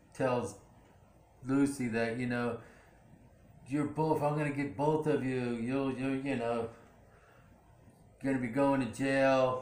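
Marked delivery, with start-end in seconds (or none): none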